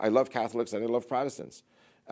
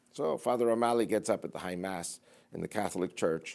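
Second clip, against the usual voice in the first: ordinary delivery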